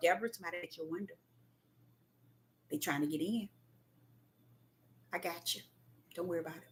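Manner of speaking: very quiet, soft, gentle, calm murmur. Deborah retelling what he says to her, imitating a real soft, calm voice. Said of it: "a real soft, calm voice".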